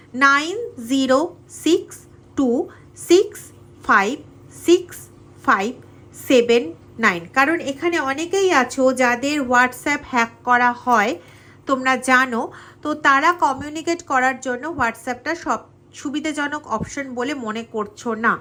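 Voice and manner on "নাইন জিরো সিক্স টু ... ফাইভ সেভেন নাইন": slow, each digit separated by pauses. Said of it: "তাও আমি আস্তে আস্তে বলছি".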